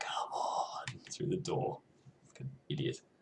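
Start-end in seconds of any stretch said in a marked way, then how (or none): 0.0-1.0 breathy, barely-there, very quiet whisper. Retelling how Haley calls through the door: imitating Haley whispering. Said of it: "She's whispering".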